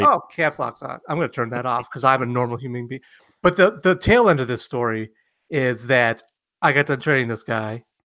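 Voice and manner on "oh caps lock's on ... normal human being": usual speaking voice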